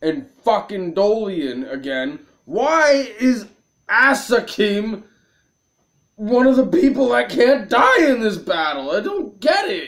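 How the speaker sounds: seething, fed-up, furious delivery. Reacting to a battle they just played, furious. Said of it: "I'm so mad".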